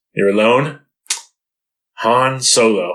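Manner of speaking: imitated sarcastic speaking voice. Retelling a movie scene where a guard names han: imitating a guard speaking sarcastically. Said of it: "he's doing it sarcastically".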